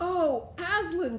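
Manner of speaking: high exclaiming cry, frightened and glad. Two children staring up at him cry out, frightened and glad. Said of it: "cried both the children, staring up at him, almost as much frightened as they were glad".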